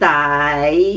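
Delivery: die said with Cantonese fifth tone. Showing tone numbers on one syllable, tone five on 'die'. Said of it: "Tone five is die".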